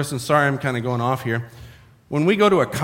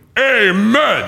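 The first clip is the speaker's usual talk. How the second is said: full-throated, belted, drawn-out "amen"; 6 semitones higher, 5 dB louder than usual. Retelling how the grandpa belted out amen at church: imitating a deep baritone belted amen. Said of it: "He just belted out".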